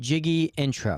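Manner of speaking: normal talking voice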